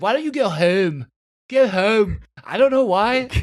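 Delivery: put-on detective voice, Northeast US accent. Recommending a show, copying the lead actress's accent: Kate Winslet's Northeast accent. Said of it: "you should watch it just for her accent".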